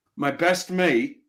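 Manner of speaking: attempted British English accent. Trying to tell the others about a friend: attempted British accent. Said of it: "Let me see if I can do this British like".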